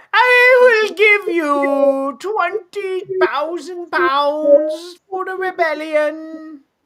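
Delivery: very high, loud, regal queenly voice. Reading a historical event, then voicing Elizabeth the First: Elizabeth the First impression. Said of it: "Is that your impression of, uh, Elizabeth the First?".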